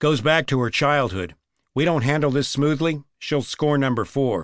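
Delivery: plain reading voice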